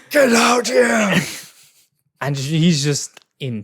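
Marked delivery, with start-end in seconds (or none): 0.1-1.1 mock furious, loud, high angry scream. Imagining a man finally reaching the villa for his girl, imitating a Kratos scream. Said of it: "he's screaming her name".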